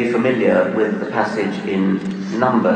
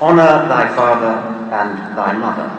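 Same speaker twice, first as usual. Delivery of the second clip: usual speaking voice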